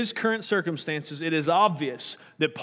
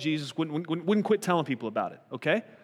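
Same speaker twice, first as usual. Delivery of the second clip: normal talking voice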